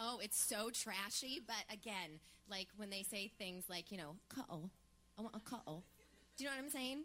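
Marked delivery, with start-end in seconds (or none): 4.3-5.8 fake, put-on British accent. Mimicking how certain people say a word, in a put-on british accent. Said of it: "I understood the accent".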